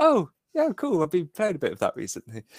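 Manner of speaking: perked-up, brightened, interested, quick and animated. Retelling own reaction when australia came up: imitating own perked-up reaction. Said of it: "I sort of perked up a bit".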